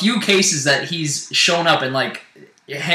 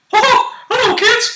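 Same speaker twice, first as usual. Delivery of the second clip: squeaked out high and loud; 5 dB louder than usual. Opening the show and greeting the audience in a Mickey Mouse voice. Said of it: "Why are you being Mickey Mouse?".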